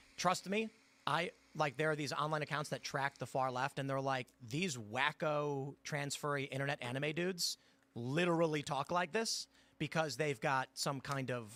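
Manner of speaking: ordinary talk, nothing marked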